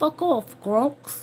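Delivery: put-on Australian accent. Voicing what he said, in the speaker's own put-on australian voice. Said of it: "In my Australian voice".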